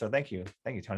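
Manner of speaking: moved, sincere, heartfelt emotional tone. Thanking Tony for something unexpected he said: emotional. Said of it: "I'm really emotional".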